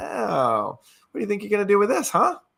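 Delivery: very high, loud, sassy, needling tone. Voicing a sassy, kind of evil character taunting you; sassy taunting. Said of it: "he's sort of like taunting you".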